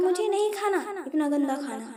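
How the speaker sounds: ordinary delivery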